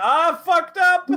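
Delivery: mock pained yelling. Voicing a wounded character heard from afar: Xavier yelling.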